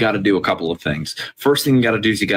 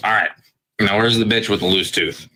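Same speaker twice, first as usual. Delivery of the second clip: put-on wasted, hammered, drunken delivery. Telling a joke, voicing a man who returns to the bar: acting drunk. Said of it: "comes back into the bar hammered".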